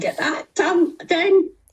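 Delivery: high, slow, drawn-out annoyed complaining yell. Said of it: "imagine the neighbours is going".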